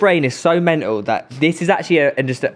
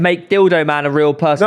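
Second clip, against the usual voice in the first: ordinary delivery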